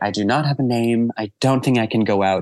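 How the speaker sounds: frantic, hysterical, high-strung outburst. Retelling the first time getting into drag without a name, imitating own hysterical voice. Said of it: "but more in a hysterical voice".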